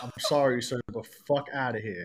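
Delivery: put-on New York accent, laid on thick. Acting out how a New Yorker would answer: imitating a New Yorker. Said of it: "and then be like".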